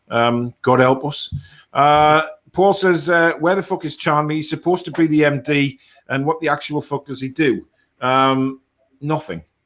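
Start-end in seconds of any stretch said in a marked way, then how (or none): none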